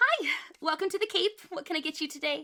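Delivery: bright, cheery tone. A narrator voices a bartender greeting a newcomer at the bar, cheery voice. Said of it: "with a cheery voice".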